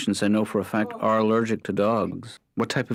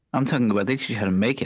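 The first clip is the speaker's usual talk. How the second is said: ordinary talk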